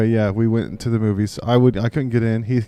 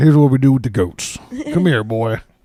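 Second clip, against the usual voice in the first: exaggerated put-on rural Virginia accent, higher and louder; 3 semitones higher, 5 dB louder than usual. Retelling taunting a kid in a wrestling game: put-on Virginia redneck accent. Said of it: "I turn full Virginia".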